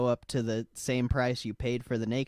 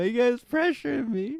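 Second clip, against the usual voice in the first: very high, squeaky voice crack; 12 semitones higher, 4 dB louder than usual. Protesting to friends who keep urging him on; voice cracking. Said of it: "Did you hear that voice crack?".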